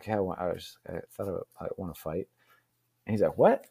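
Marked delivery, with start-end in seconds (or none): 0.0-2.3 mock blurted mutter under breath, much quieter. Retelling finally breaking an awkward silence, imitating a mutter under breath. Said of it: "I just kind of blurted it under my breath".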